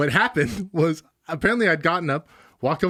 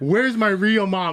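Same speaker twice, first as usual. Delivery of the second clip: mock distraught, crying outcry; 4 semitones higher than usual. Retelling screaming a question at their mom, acting out the screaming. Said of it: "I'm like screaming this at her".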